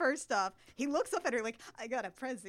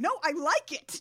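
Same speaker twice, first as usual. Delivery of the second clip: put-on yell, higher and louder; 4 semitones higher, 5 dB louder than usual. Recounting a movie scene, acting out a character's yell. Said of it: "She yells".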